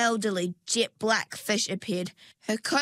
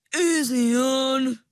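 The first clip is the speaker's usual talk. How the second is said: swampy, eel-like swamp voice; 4 semitones higher, 5 dB louder than usual. Reading a story aloud, the narrator voices the eel in a swampish voice. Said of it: "he said in a swampish voice".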